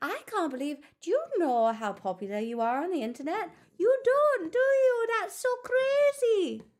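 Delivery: very high, sing-song put-on Irish accent. Putting on an accent for fun while talking to a listener, Irish accent. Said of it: "you don't like my Irish accent?".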